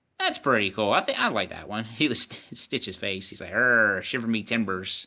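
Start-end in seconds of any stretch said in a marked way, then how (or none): 3.5-5.1 put-on pirate voice. Voicing a Stitch pirate figure while unboxing toys: put-on Stitch pirate voice. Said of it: "That's exactly how Stitch talks".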